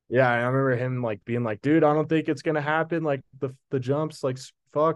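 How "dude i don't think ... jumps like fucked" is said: high, raised yell projected over a distance. Retelling a man calling to him across a ridge, the speaker is retelling a yell. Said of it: "he's like yelling at me".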